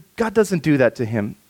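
ordinary talk

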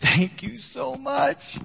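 play-acted crying, pitched way up and slow. Retelling a jailed man thanking the pastor: imitating someone crying.

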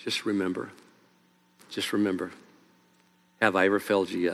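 very low, tender, gentle, soft-spoken tone. Acting out a comforting answer to someone who is scared, retelling a gentle reply. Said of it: "God says to you very gently".

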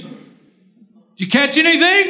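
mock sarcastic, high calling out. Retelling a figure on the beach calling to fishermen: imitating a sarcastic call-out. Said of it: "crying out sarcastically".

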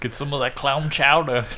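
bad, terrible fake Boston accent. Riffing after hearing they're all from new england: terrible boston accent. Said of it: "that was a terrible fucking Boston accent".

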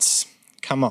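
ordinary delivery

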